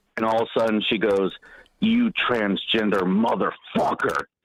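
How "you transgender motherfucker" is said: hostile, angry, growled-out words. Retelling what she suddenly said as the speaker walked by, growled. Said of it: "she just growls the, the word motherfucker".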